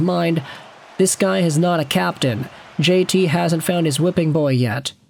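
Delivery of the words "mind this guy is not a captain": usual speaking voice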